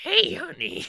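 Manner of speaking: put-on very high, loud, raspy smoker's old woman voice. Friend imitating how their nan sounds, imitating nan's cigarette voice. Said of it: "my nan sounds like cigarettes".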